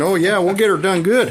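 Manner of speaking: put-on Canadian accent. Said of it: "I'll do the Canadian accent".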